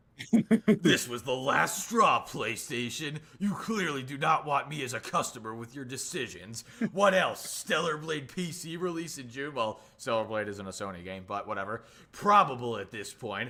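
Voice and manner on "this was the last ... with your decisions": theatrical anime villain voice. Host reads out a quoted complaint to playstation in an anime villain voice. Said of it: "read this in like an anime villain voice".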